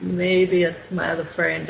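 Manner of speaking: ordinary talk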